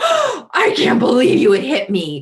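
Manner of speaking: gasping, wounded outrage, high and swooping. Voicing a parent reacting to a toddler's hit: voice acting a shocked parent. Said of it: "I'm trying to do some voice acting".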